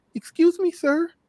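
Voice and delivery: tiny, very high little voice. Retelling a woman in a line squeezing past: imitating a little voice. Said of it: "I could hear her little voice behind me".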